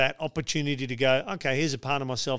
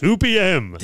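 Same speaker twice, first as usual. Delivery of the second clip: very loud, high, cheesy radio announcer voice; 6 semitones higher, 9 dB louder than usual. Giving the time of the other game day on the show: radio announcer voice. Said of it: "Why you have to say it like that?".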